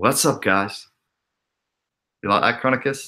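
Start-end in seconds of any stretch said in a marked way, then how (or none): 0.0-0.9 put-on, best-attempt American accent. Greeting his audience to show off his best try: American accent. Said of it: "That's my best U S accent".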